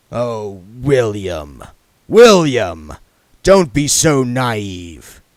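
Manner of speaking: infuriatingly calm, drawn out. Lord de Ward replies to his son William: Lord de Ward, infuriatingly calm. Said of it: "said his father, / said his father, / still in the voice of infuriating calm".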